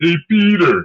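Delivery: loud, high cartoon voice, called out. Showing another cartoon voice after being asked for one: Joe Swanson voice. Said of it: "I could do, um, Joe Swanson".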